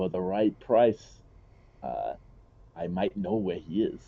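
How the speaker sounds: whispered character voice. Voicing a drunk character offering information for a price: whispering character. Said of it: "in a whisper".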